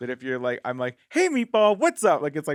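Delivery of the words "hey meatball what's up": very high, very loud, perky on-camera host voice. Showing how a greeting sounds in online content: perkier on-camera hosting voice.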